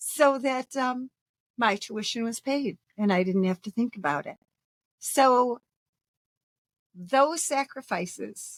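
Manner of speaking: choked-up, tearful, tearing up mid-sentence. Remembering a woman who paid the speaker's school tuition, tearing up. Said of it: "now I'm tearing up".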